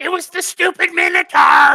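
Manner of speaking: piercing goblin shout, very high and very loud. Voicing Splug blaming the Minotaur: Splug yelling. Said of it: "Splug free action yells".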